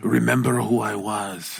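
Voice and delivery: mock whispering. Joking about being old in bed, imitating a whisper. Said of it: "I'm gonna have to whisper things like".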